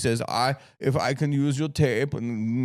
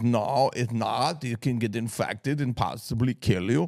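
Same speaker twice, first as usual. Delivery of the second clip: slow, put-on German accent, words drawn out. Retelling what his doctor told him, in the doctor's german accent. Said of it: "I'll try to do his accent. He was German".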